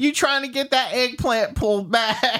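put-on old grandma voice, very high-pitched. A speaker joking with the others performs a bit in an old grandma voice. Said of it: "Sound like some grandma".

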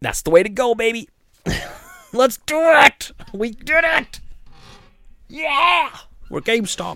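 very high, drawn-out, cheering corporate exec voice. Mocking a corporate decision-maker's choice: mocking a corporate executive. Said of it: "who at corporate's like".

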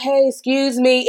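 soft, calm male voice. Woman retelling how a man approached her, quoting him: retelling a soft, calm greeting. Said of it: "It was very, you know, soft, calm".

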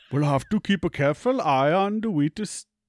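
very loud, put-on Indian accent. Player retrying the character's line in a different accent: Indian accent. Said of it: "That was Indian".

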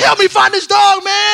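mock furious pleading, very high and loud. Retelling asking a staff member to help find the dog: imitating own angry voice. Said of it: "'cause I'm so angry".

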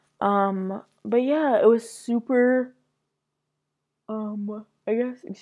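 speaking through a yawn. Speaker recording a talk about prom night, yawning while talking. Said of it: "I'm yawning while I'm recording this".

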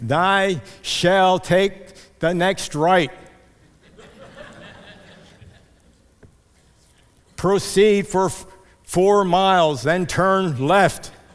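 grand, loud, booming voice from above. Speaker imagines the voice people hope will give them directions; booming voice from heaven. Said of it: "some type of a booming voice".

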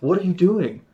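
mock fuming, loud, high, super angry voice. Retelling a brother-in-law's reaction to a game choice; imitating someone getting super angry. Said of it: "getting super angry at me".

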